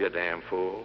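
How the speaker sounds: muttered under breath. Retelling what he says after politely letting salesmen smoke, muttered under his breath. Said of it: "And then under my breath".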